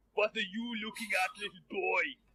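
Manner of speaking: put-on big, burly man character voice. Voicing a very large, burly man confronting a player: burly bearded man. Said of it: "a very large, very burly man".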